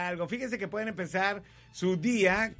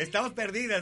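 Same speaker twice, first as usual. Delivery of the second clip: ordinary talk, nothing marked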